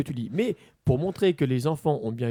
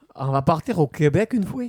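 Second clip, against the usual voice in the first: put-on Belgian French accent; 4 dB louder than usual. Asked to take a turn, the speaker tries a Quebec accent: Belgian accent. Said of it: "j'ai fait le- le- l'accent euh, belge".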